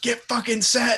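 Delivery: very high barking yell. Retelling a quarterback yelling at his own offense: imitating Matt Ryan yelling. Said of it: "yelling at his own offense to get set".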